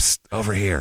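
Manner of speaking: put-on whisper. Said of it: "and he'd whisper".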